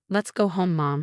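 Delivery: ordinary delivery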